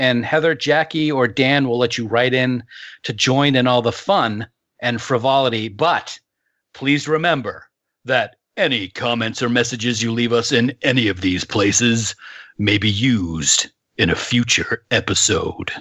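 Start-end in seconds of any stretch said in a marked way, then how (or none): 5.7-15.7 put-on menacing, sinister, ominous tone, drawn out. Ending a group announcement with a warning: mock ominous tone. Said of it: "that was pretty ominous".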